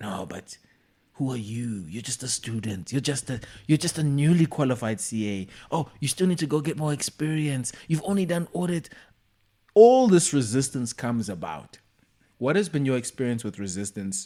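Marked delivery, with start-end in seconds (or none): 0.0-8.9 whispering in a hushed, doubtful voice. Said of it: "that voice that starts to whisper".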